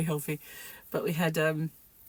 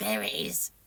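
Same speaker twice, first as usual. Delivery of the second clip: spooky, eerie, cackling storybook witch voice; 7 semitones lower than usual. Retelling how mum found lost things: imitating mum's witch voice. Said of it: "She used to have this witch voice".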